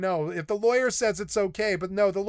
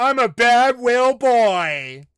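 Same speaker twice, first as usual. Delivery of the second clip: put-on slow, booming, belted, drawn-out word "boy"; 4 semitones higher, 8 dB louder than usual. Joking about a person's posture, doing an Austin Powers impression. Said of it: "like Austin Powers".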